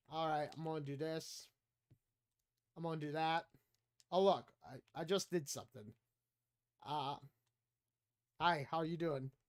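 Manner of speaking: acted, hushed, listless, low and very quiet low-energy drone. Imitating own past streams, imitating own low-energy streaming. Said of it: "It's pretty low energy".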